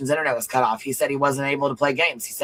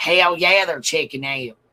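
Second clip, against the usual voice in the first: put-on country accent; 2 semitones higher than usual. The host announces the ending and says he has to do it: country accent. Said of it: "Got I got to do my country accent".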